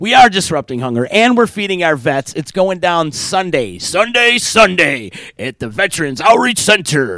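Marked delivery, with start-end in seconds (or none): 2.3-7.2 slow, hyped-up monster truck announcer voice. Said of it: "that was my monster truck voice".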